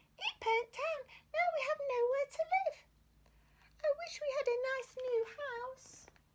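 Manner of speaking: very high-pitched squeaky mouse voice. Reading a children's story, the narrator voices the mother mouse answering George, squeaky mouse voice. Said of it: "squeaked the mother mouse".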